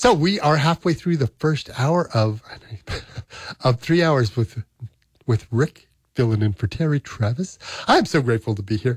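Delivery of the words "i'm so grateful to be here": audibly smiling voice. A fill-in radio host, early in the show, with a smiling voice. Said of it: "you can hear a smile".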